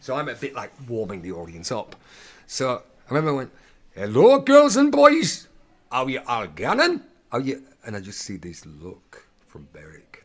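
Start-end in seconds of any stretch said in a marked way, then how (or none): 3.9-7.6 put-on very loud, very high, booming Geordie accent. Retelling a pantomime opening line to the audience: Geordie accent. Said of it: "the sort of Geordish, northeastern accent".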